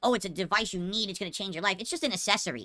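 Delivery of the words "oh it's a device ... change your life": ordinary delivery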